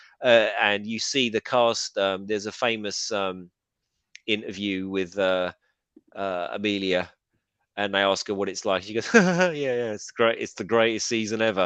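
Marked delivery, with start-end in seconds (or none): 9.1-11.7 play-acted, heavy, laid-on-thick sarcasm, swooping pitch. Retelling a cast member's interview answer, mock heavy sarcasm. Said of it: "like heavily sarcastic".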